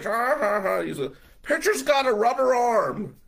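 weird jeering voice, very high, loud, mocking. Recalling a bad doubleheader, the speaker imitates Danny heckling him, Danny's weird mocking voice. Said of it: "Danny said this weird voice".

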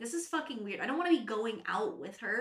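ordinary talk

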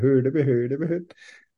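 put-on Swedish-style puppet babble. Joking that the listeners are not getting the Swedish Muppet: Swedish Muppet impression. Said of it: "you did not get the Swedish, Swedish Muppet".

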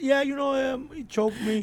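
nonchalant, matter-of-fact tone. Retelling how a storyteller mentioned being choked: imitating a casual, matter-of-fact tone. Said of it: "But he says it so, like".

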